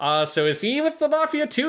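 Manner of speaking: squeaky, bewildered cartoon voice.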